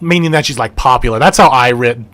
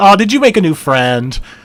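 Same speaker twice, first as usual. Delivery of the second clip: sweet, higher-pitched talking-down tone; 6 semitones higher than usual. Showing how a parent talks to their child: parent talking to a child. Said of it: "like a parent talking to her kids".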